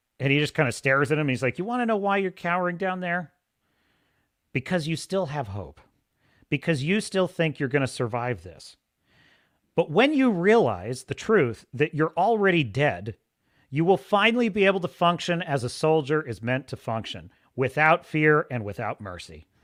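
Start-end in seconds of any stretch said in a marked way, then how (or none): none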